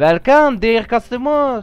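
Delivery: put-on, fake French accent. Playing a French café server greeting a customer: put-on French accent. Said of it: "I think my character's French".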